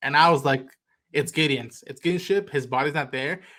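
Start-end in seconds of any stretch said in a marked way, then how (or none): none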